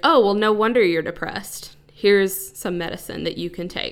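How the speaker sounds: ordinary delivery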